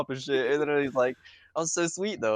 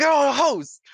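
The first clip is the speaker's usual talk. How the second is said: put-on scream, higher and louder; 12 semitones higher, 9 dB louder than usual. Retelling how two friends screamed together after leaving their exes: imitating screaming. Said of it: "We were just screaming, like".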